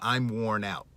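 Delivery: ordinary delivery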